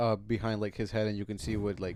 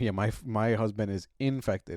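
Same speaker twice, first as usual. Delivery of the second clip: usual speaking voice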